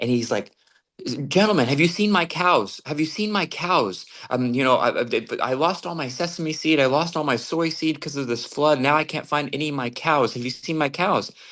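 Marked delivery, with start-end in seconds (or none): 1.3-11.3 put-on frantic man voice, pleading. Retelling a story of a man approaching some gentlemen, imitating a frantic man.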